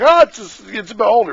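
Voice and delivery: high-pitched, loud, surprised exclamation.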